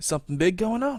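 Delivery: high, hushed half-whisper. Voicing a character who leans in and asks the rune hunter: half-whispering. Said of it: "whispering to you now".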